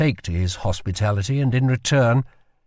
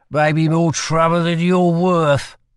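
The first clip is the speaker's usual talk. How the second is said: put-on high-pitched drunken slur, words smeared together; 6 semitones higher, 4 dB louder than usual. Narrator reading a drunk man's line to a woman, drunken slurred speech. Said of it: "he slurred".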